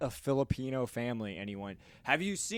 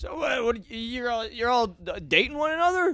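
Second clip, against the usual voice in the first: put-on drunk man voice, higher and louder; 9 semitones higher, 7 dB louder than usual. Retelling what a drunk man asked a group at a donut shop: imitating a drunk man. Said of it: "this hammered drunk man ... he goes".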